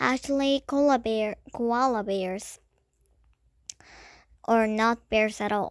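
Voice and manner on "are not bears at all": plain reading voice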